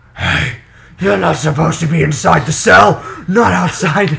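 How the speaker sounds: loud, rough, gravelly, rasping voice. Playing guard one in a group role-play: Batman voice. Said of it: "it's Batman".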